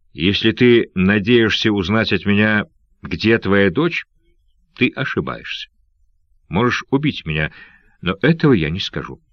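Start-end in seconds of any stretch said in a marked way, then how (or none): none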